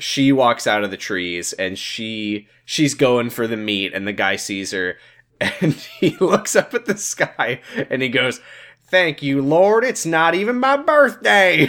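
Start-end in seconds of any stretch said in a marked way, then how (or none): 8.9-11.7 put-on high, backwoods yeehaw-style country-boy voice. Acting out a guy in a story who sees a woman, in country boy voice. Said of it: "a yeehaw country boy".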